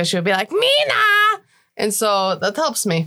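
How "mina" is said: high, stretched-out put-on yelling. Acting out how the speaker's mother used to yell the name: yelled name Mina. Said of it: "the way that my mother used to yell it at me".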